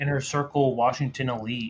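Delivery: ordinary talk, nothing marked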